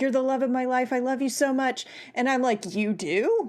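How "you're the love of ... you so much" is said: fast, put-on gasping, pleading voice. Mocking a film's final scene where she begs him; mock-gasping Toni Collette plea. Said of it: "gasping like".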